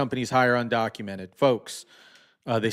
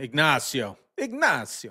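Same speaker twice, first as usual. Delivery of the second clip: sing-song put-on Italian accent; 2 semitones higher than usual. Speaker saying a person's name, Italian accent. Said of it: "that's an Italian accent".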